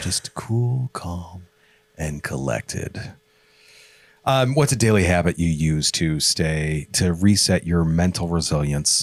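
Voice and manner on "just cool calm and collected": cool, calm radio announcer voice. Speaker showing off their cool, calm, collected radio voice, NPR radio voice. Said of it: "all N P R for people".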